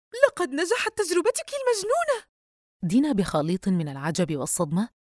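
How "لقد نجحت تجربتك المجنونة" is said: piercing, shrill, very high shouted outcry. Yusra calls her friend Dina and shouts at her as she answers. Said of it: "صرخت فيها قائلة".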